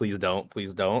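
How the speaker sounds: cautious, careful pleading tone. Voicing a character raising hands toward a creature: cautious pleading.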